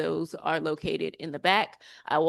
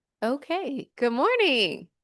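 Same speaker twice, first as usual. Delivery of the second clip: high teacher voice with swooping pitch; 9 semitones higher, 4 dB louder than usual. A speaker greets a waiting audience before starting, in a teacher voice. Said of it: "I knew I still had my teacher voice".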